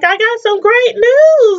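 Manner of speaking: announcer voice shooting very high. Retelling a woman telling a man she has news: imitating a super high voice. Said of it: "Her voice went super high".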